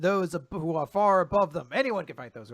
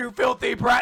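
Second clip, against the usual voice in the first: put-on, all-out enraged, shrill, furious scream; 7 semitones higher, 5 dB louder than usual. Retelling a manga fight, a villain grabs someone's face: imitating a furious scream. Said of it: "just screams".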